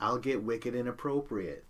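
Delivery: plain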